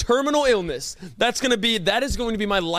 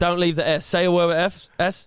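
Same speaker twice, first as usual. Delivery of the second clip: fake Australian accent, lower pitch; 4 semitones lower than usual. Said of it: "teach me in an Australian accent".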